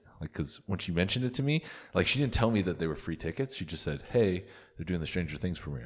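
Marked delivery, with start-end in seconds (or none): none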